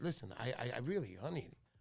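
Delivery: hushed, secretive, confiding half-voiced stage whisper. Retelling asking a salesman about a phone number: retelling a half-whisper. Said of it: "and then I whispered".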